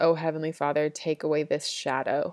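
ordinary delivery

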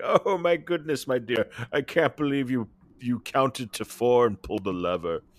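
heavy patronizing, doting tone. Recapping how he patronizingly praised her for pulling the lever: First Doctor impression. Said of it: "your First Doctor impression is improving".

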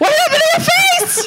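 play-acted blurted exclamation, very high-pitched. Retelling what dad said on seeing her face without makeup: imitating dad exclaiming. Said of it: "my dad exclaims".

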